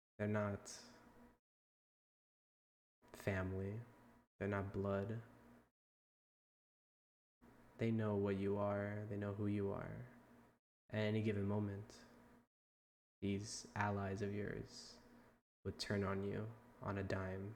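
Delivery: whispering. Voicing a character who steps close to Orchid: whispering in someone's ear. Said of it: "whisper in your ear".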